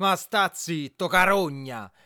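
drawn-out, high, slow outcry, reading tone. In a cellar, a woman turns on the man who just spoke, shouting. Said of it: "gridò Adele".

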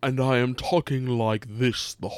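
put-on pretentious villain voice. Complaining about how Shao Kahn talks, doing a pretentious Shao Kahn voice. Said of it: "almost like pretentious".

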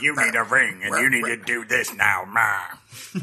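very slow delivery, each word barked out. Mocking a game character's lines: Celebrimbor impression, barking like a dog. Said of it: "he sounds like a barking dog".

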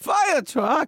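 acted-out thrilled yelp, excited, very high pitched. Retelling a passenger's outburst during an emergency landing: imitating an excited shout. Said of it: "one guy in the back of the plane goes".

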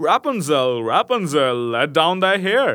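long, slow, drawn-out call rising upward. Narrator reads the king's son calling up to the window, calling out. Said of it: "came and cried".

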